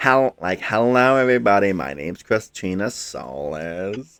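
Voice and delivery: put-on valley girl voice, soles drawn out. Retelling how she voiced her stream character after a viewer's suggestion: valley girl voice. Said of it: "do a Valley Girl impression for your character".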